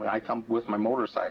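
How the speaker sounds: ordinary talk, nothing marked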